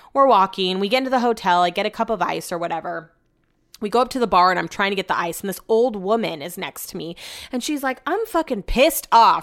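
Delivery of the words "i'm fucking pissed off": put-on Southern American accent, pitched high. Imitating an old woman complaining at a hotel bar: put-on southern accent. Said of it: "She has a southern accent".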